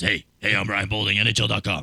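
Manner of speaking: scratchy, rough-throated impression. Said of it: "now you sound like this".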